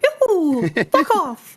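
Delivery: voice goes way up and swings around. Joking about the voice actor as a Succession boss: little Mario voice. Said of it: "the little Mario, Mario voice going".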